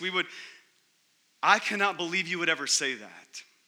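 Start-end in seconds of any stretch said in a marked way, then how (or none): none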